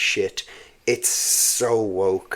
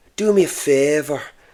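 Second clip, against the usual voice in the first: put-on high, pitched-up Cork Irish accent; 6 semitones higher, 3 dB louder than usual. Explaining Irish accents, imitating a Cork footballer: Roy Keane impression. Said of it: "So he, like, speaks like that".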